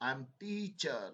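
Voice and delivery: word "teacher" stressed. Teaching word stress in English, stress on teacher. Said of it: "teacher के ऊपर stress आ रहा है".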